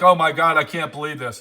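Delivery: ordinary delivery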